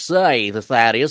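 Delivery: put-on New England putzy accent. Describing an imagined guy, the speaker voices him: New England putzy accent. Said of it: "talks with that New England putzy accent".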